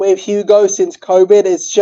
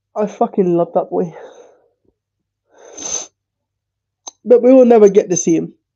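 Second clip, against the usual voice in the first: speaking in tears, crying. Speaker talking about a boy they love and will never see, crying. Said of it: "I'm sorry for crying".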